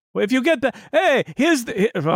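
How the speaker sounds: put-on Russian accent. Describing a character who immigrated and drives a cab, in a put-on voice for him. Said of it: "I don't know why I'm doing that voice".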